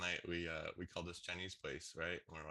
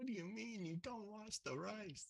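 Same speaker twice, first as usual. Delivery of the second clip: high-pitched, outraged, angry outburst. Describing a video where a man reacts to a lady's advice, mock-angry outburst. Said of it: "He gets all mad".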